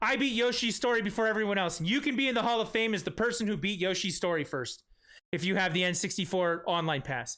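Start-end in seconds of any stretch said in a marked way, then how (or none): none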